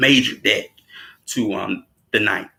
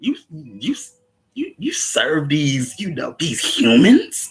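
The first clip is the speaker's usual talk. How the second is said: mock scoffing, higher; 5 semitones higher than usual. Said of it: "he says it like Lucifer will".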